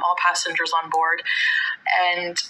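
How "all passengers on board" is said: ordinary delivery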